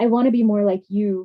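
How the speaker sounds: sweet, gentle, sugary, sincere tone. Retelling a stage partner holding up a toy microphone, imitating Laura speaking sweetly. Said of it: "she would offer sweetly".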